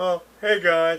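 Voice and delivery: comedy sketch robot character voice.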